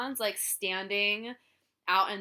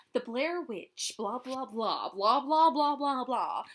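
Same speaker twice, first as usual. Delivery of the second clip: exaggerated narration, every single word over-pronounced; 3 semitones higher than usual. Describing a film's documentary introductions, in Heather's over-pronounced voice. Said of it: "She's like very over pronouncing things".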